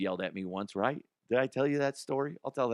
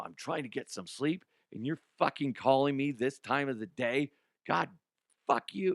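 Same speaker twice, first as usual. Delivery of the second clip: higher-pitched put-on angry voice; 4 semitones higher than usual. Retelling a phone call where Jim Nantz snapped about sleep: imitating angry Jim Nantz. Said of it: "he's just mad".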